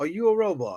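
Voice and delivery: put-on British accent. Retelling a movie scene, quoting a question: imitating Idris Elba in British accent. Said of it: "I use the British accent".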